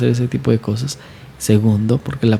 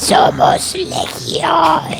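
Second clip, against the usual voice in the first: throaty, rasping, rough, guttural demonic voice. Showing how the phrase is usually said, in a guttural demonic voice. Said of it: "decir somos legión en forma gutural".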